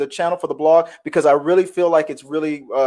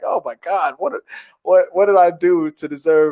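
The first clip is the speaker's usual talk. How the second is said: put-on panicked, freaking-out voice. Retelling own reaction to a funny situation: imitating own freaking out. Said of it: "it had me freaking out".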